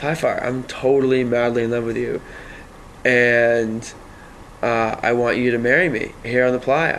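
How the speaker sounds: ordinary delivery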